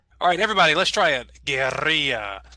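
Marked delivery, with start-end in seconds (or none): 1.5-2.4 Spanish pronunciation with a rolled R. Showing the class how to say the word: Spanish pronunciation. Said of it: "if you wanna sound like a Spanish speaker".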